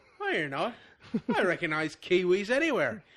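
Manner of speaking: bad put-on Aussie accent, high and sing-song. Acting out an Australian hiker confronting two men, in a terrible Aussie accent. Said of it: "I know this is a terrible Aussie accent".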